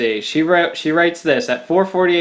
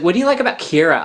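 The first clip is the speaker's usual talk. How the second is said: put-on Californian Valley Girl accent. Speaker retelling a woman on the phone asking about Kira, imitating a Valley Girl accent. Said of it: "that Valley Girl accent too".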